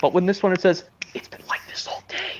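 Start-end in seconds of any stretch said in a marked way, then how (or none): 1.1-2.4 confiding, very soft, barely voiced whisper. Quoting a story line the way Percy says it: Percy's whisper. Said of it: "I'm doing this in a whisper tone".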